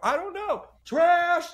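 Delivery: very high, stretched-out, drawn-out screaming. Retelling yelling at a coach at training camp: retelling own screaming. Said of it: "just started screaming".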